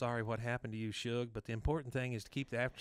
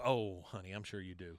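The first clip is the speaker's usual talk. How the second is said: mock-condescending tone, lower pitch; 4 semitones lower than usual. Recapping a scene and acting out one woman's answer, mimicking a condescending reply. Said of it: "how condescending is that".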